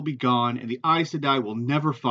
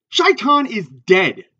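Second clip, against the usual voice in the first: rough, harshly spoken delivery; 6 semitones higher, 8 dB louder than usual. Cutting off a companion who mentions the Dark One, said harshly. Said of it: "he said harshly".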